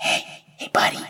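small, tiny fairy-dragon voice. Narrating a scene, the speaker voices a fairy dragon: a small voice. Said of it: "you hear a small voice in your head".

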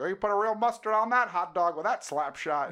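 fake Canadian commentator voice, very high and loud. Retelling a Conan bit, imitating Thomas Middleditch's fake Canadian hockey announcer. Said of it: "a fake h-, Canadian hockey announcer".

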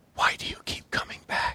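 barely audible, very quiet whisper. Game master voicing a voice behind a player, whispering. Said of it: "you hear behind you a whisper that says".

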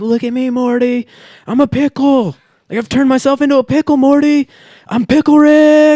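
frantic cartoon scream, very high and loud. Describing a cartoon episode where a grandpa scientist becomes a pickle, Pickle Rick impression, screaming. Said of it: "starts screaming and freaking out".

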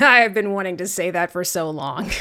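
plain

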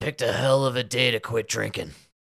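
very raspy voice. Speaker acting out the line someone should have said, in the raspiest voice. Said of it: "say in the raspiest voice".

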